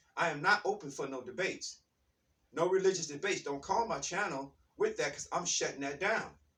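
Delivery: ordinary talk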